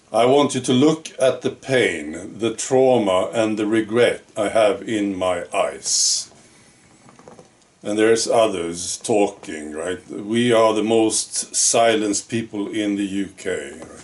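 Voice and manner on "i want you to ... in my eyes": usual speaking voice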